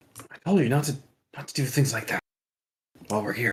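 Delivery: soft, breath-only half-whisper. Speaking in character to a companion after leaning down: half-whisper. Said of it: "lean down and whisper to her".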